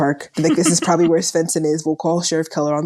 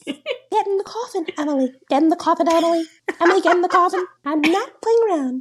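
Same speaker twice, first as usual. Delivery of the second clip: fake British accent, pitched very high; 13 semitones higher than usual. Creeping up behind someone, order them into the coffin in a put-on British accent. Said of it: "Adding a British accent to it".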